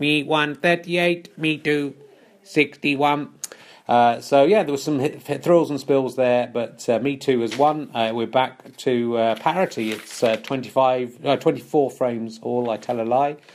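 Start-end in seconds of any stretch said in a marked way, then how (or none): 0.0-3.3 mechanical robot announcer voice. Commentating a match, the speaker gives the final score in a robot voice. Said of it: "I'll go over to robot voice to give the final score".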